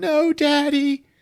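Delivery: acted tearful wail, very high-pitched, sobbing. Retelling a scene where a daughter finds her father's body, acting out crying. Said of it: "She starts crying over him".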